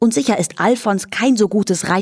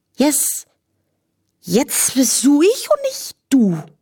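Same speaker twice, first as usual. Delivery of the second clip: thick-tongued, clumsy, slow slurring, pitched up; 6 semitones higher than usual. A character not yet in control of her human tongue, speaking; slurred speech. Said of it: "lallte Daisy".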